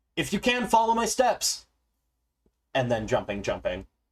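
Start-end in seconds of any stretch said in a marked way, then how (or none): 0.2-1.7 very high acted-out shout, as if running. Running through a tomb, the character yells to companions: yelling to companions. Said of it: "I'm yelling to them".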